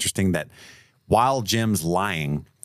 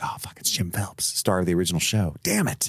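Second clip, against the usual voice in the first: mock, sudden, all-at-once dawning realization; 3 dB quieter than usual. Retelling a film scene where Ethan realizes the truth: imitating Ethan's sudden realization. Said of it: "Ethan realizes everything in that moment".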